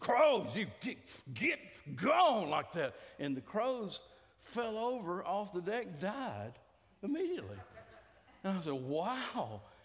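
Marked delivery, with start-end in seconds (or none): 0.0-2.5 harsh, mean, loud voice. Telling how Rick ordered two crows off his deck, imitating Rick's harsh, mean voice. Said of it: "in a harsh, mean voice".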